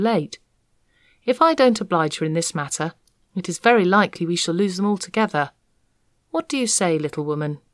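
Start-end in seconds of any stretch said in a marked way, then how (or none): none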